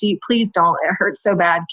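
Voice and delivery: put-on desperate, begging pleading tone. Retelling labor in the tub, pleading with the nurse: imitating her own begging. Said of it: "practically begging".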